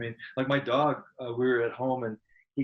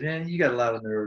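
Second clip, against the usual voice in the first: plain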